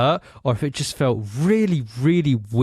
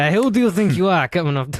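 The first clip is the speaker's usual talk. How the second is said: terrible put-on Italian accent; 7 semitones higher, 3 dB louder than usual. Voicing an Italian mantis that was cut off, in a terrible Italian accent. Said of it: "that was a terrible".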